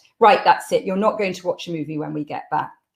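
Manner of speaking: fast, threatening tone of voice. Retelling trying to get screaming Felix into the car's back seat, retelling a threat. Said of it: "then I move to a threat".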